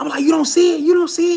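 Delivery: play-acted shrill, very high, frantic panicked scream. Telling a scary story, speaker replays screaming at dad in the car, retelling panicked screaming. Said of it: "I'm I'm screaming".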